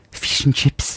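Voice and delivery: put-on New Zealand accent. Prompted by the other speaker, attempting the phrase in a New Zealand accent. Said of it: "give me the word fish and chips in New Zealand".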